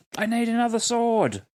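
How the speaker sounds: shrill, very high, loud shouted yell. Yelling out to the party during a fight: yelling in character. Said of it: "I am going to yell out".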